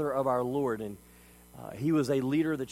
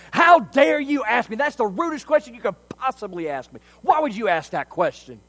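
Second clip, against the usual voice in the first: raging screech, very high-pitched, loud and shrill; 9 semitones higher, 10 dB louder than usual. Retelling a story, voicing a dad yelling at his little boy, imitating a furious scream. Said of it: "starts screaming".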